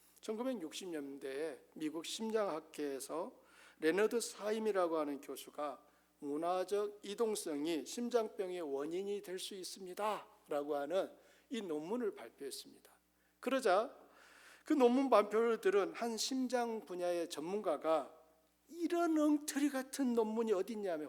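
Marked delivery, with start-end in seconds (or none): 18.6-21.1 high-pitched, angry, indignant scoff. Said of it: "화를 냈어요".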